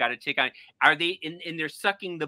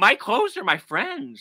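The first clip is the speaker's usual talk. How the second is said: weepy, high, swooping, tearful crying voice; 6 semitones higher, 4 dB louder than usual. Retelling what was said to the exterminators: imitating own past crying. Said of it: "And I started crying".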